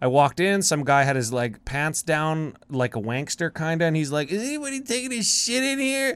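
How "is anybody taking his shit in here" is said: put-on very high, hammered, drunk voice. Retelling what a drunk guy in the bathroom line said: imitating a hammered guy's voice. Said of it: "That was literally his voice".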